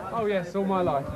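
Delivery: ordinary delivery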